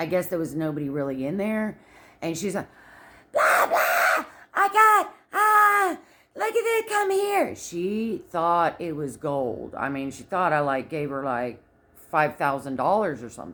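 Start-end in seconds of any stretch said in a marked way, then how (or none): 3.3-7.5 mock very high, loud, drawn-out scream. Retelling how a restaurant worker reacted to a big tip: imitating someone screaming. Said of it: "she started screaming across the restaurant".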